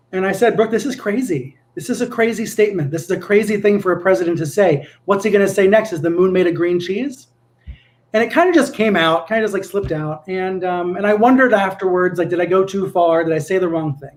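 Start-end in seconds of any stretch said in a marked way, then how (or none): none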